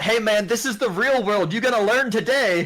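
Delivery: high-pitched yelling. Retelling a famous clip of a player taunting a kid: imitating Justin Wong yelling.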